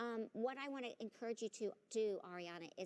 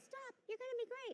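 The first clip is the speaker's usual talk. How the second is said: very high, squeaky, reassuring voice. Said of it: "Why did your voice change with her?".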